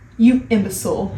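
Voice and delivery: ordinary delivery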